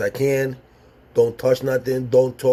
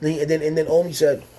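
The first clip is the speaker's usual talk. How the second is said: ordinary talk, nothing marked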